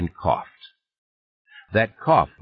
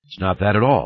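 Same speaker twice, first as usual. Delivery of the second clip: ordinary delivery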